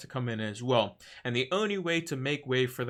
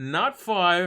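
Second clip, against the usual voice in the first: cracking voice, pitched up and loud; 6 semitones higher, 5 dB louder than usual. Counting up the transfers made for this game week, voice cracking. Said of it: "A little bit of a voice crack there".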